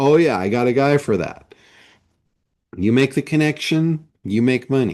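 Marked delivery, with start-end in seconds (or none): none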